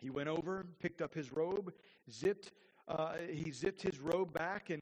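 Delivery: ordinary delivery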